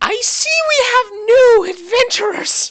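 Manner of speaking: very high, very loud, shrill screeching little voice. Narrator voicing a little figure greeting the new adventurers, screechy little voice. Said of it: "you hear the little voice screech out".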